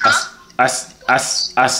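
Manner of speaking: stuttering, stammering speech. Answering other speakers after getting scared: stuttering. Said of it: "I'm stuttering".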